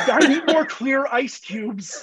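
mock, high-pitched screaming. Imitating a boss screaming at his secretary: imitating someone screaming. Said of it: "he's just screaming at his secretary".

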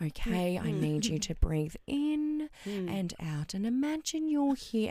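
slow, drawn-out, soothing hypnotist voice. Retelling a hypnotherapy session, quoting the therapist: imitating a hypnotherapist's voice. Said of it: "she's talking to me in this voice".

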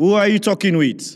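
acted-out very high, loud calling voice. Narrating a father calling from the house to the kitchen, in a loud voice. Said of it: "Father asks Mora with a loud voice".

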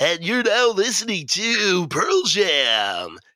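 put-on high, swooping, childish on-air radio DJ voice. Retelling playing mixtapes at a friend's house, announce the band in a mock radio DJ voice. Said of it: "we would play it off like we were radio DJs".

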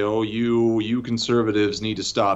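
usual speaking voice

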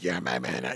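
badly ruined, wrecked, damaged voice. Retelling what a lady in a store said: imitating a lady's wrecked smoker voice. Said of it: "that's how her voice was, minus the voice box".

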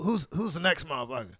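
hoarse, raspy, scratchy voice on every word. Recalling Rodney on stage at the Comedy Act Theater, imitating Rodney's raspy voice. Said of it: "and he had this raspy voice".

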